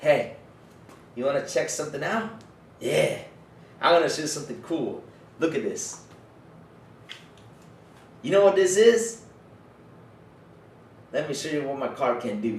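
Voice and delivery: proud, bragging show-off delivery. Acting out going up to a lady with a new car: showing off to a lady. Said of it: "Imagine me right now going up to this, to this lady".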